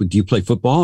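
ordinary talk

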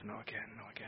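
mumbling under breath. A host thanking a guest acts out the guest mumbling under his breath. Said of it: "Now he mumbles under his breath".

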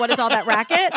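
ordinary talk, nothing marked

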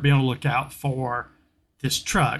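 plain

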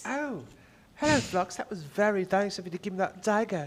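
hammed-up British accent. Playing a disguised character in a role-play, with a British accent. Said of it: "my British accent is kind of like this".

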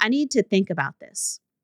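ordinary delivery

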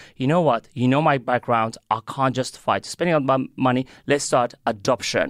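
plain

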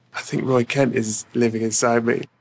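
ordinary talk, nothing marked

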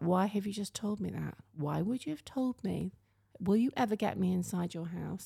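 ordinary delivery

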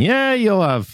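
put-on very high-pitched elderly man's voice.

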